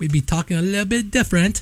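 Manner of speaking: terrible, bad, fake put-on British accent. Musing on how they would talk if they had stayed that way; bad British accent. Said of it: "that was the worst British accent I've ever heard".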